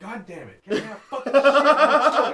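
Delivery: high, loud, frustrated yelling rant with laughter. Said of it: "he was like".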